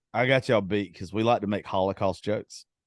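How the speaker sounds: ordinary talk, nothing marked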